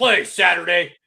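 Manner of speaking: epic, loud ranting yell. Recalling a favorite epic rant, imitating the Sheriff yelling. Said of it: "epic sideline of him yelling".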